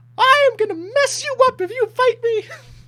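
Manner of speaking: comically high mouse voice. Voicing a grumpy mouse character greeting the table: comically high mouse voice. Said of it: "comically high voice".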